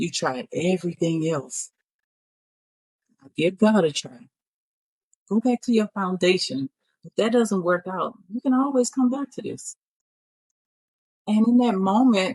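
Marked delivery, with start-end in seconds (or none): 0.0-9.8 imitated whisper. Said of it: "the voice said".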